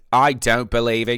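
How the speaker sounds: loud, slow, bad Kiwi accent. Imitating a preacher from an earlier video: failed Ray Comfort impression. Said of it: "I can't do his fucking voice".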